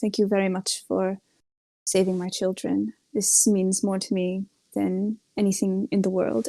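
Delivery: distant, off, detached voice. Voicing the king as he thanks the rescuers of his children, distant and off. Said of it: "he seems just very uh off distant".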